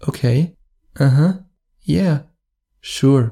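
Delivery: shy, tender, gentle and bashful voice. Acting out a woman's reply to being told he wants to kiss her, imitating a very soft reply. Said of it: "very, very soft".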